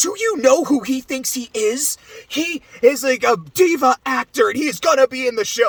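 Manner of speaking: overacted, pitched high. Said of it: "when he's hamming it up to the guards".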